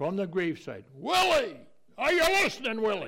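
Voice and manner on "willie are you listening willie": put-on bellow, much higher and louder. Retelling how he called to his dead friend at the gravesite, bellowing like Ian Paisley. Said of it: "Ian Paisley bellowed".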